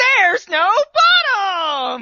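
high, swooping game-show-host announcer voice. Retelling how Crocodile delivers a line looking into a hole, as a game show host. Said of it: "sounded like he was introducing a game show".

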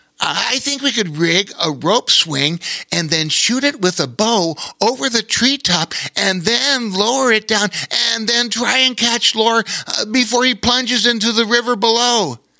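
eager, excited, very high voice. Narrator reads a river otter continuing to explain his plan, excited. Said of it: "He continued excitedly".

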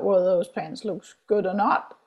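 ordinary talk

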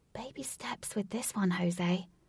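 quiet half-whispered aside. Katie answering jose's question half-whispered in her ear, half-whispered. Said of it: "Katie whispered".

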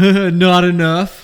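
very loud, high-pitched playful joking scream. Speaker recounts his buddy in the passenger seat answering a cop, retelling a joking scream. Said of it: "jokingly screams while fake hip going".

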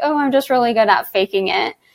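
mock sarcastic tone of voice. Recalling what an interviewee said when asked about their role, mock-sarcastic reply. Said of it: "they sarcastically said like".

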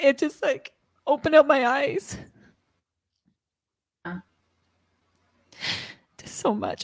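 tearful crying speech. The host, talking with a guest about feeling abandoned, speaking while crying. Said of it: "I'm sorry. I'm crying".

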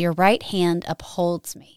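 ordinary delivery

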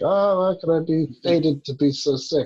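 high, loud, self-pitying whine like a sick man.

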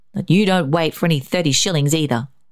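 plain

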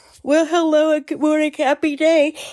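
yawning while talking. Podcast host greeting listeners on a Sunday morning, yawning while talking. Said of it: "excuse me, I'm yawning".

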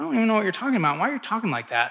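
usual speaking voice

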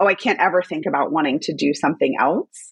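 normal talking voice

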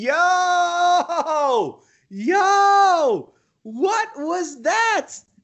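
high, loud scream full of excitement. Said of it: "I'm screaming in my house".

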